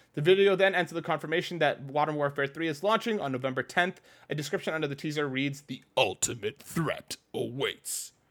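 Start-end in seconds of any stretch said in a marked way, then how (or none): 5.6-8.1 hushed monster truck announcer voice. Host reading the description under a game teaser, monster truck voice. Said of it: "That is such a good Monster Truck voice".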